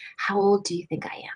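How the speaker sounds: hushed, close, secretive whisper. Retelling what a woman beside her in yoga class asked: imitating a whisper. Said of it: "And she whispered to me".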